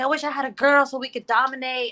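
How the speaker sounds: heated, high angry outburst. Retelling getting emotional with the boys at home, imitating herself yelling angrily. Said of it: "I start yelling".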